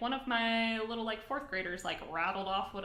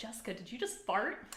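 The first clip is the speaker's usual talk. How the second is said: usual speaking voice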